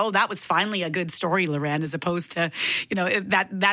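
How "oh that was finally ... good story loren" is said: plain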